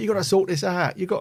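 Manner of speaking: put-on very high, loud yell in a Cockney accent. Describing the scene where Ben escapes the factory, imitating Ben yelling. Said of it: "he's like yelling at the Doctor".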